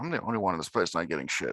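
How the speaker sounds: low, muttered half-whisper to himself. Voicing a character at the table: half-whispering under his breath. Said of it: "Whispers under his breath".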